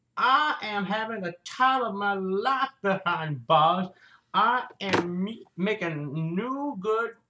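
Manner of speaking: put-on old-age tweak, sounds like a very old man. Imitating how Bill Cosby talks now at eighty-three: old Bill Cosby voice. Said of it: "Now he talks like this".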